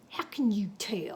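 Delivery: whispered, snake-like, mean hiss. Reading a story aloud, the would-be cowboy answers Fare Thee Well: hissed, mean as a snake. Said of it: "he hissed, mean as a snake".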